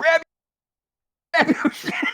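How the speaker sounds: very high, full-lung, top-of-the-lungs holler. Describing a planned bit where Barry runs into a bar, acting out a full-lung yell. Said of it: "yelling at the top of his lungs".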